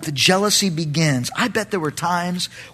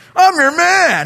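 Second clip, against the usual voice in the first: keen, eager, emphatic delivery; 10 semitones higher, 5 dB louder than usual. A speaker discussing chapters they read, retelling a line with added emphasis. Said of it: "I added that emphasis of like".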